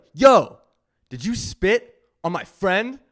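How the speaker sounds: high, confrontational, challenging tone. Retelling confronting a man on a platform over his friend, retelling a yell. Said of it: "and I'm yelling".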